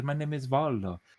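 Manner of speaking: put-on rough Italian accent. Reminding a player of a character the DM voiced: Volo's sort-of Italian accent. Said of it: "spoke in a sort of Italian accent".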